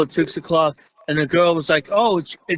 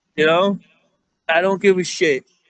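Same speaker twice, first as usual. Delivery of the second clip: ordinary talk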